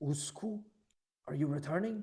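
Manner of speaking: loud whisper. Voicing a guard who asks if someone is returning: whispering, but louder. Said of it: "whisper in quiet but m-, louder than the other person".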